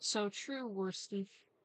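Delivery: computer text-to-speech reading voice. Repeating a phrase someone heard, in Sam text-to-speech voice. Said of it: "Just Sam text to speech voice".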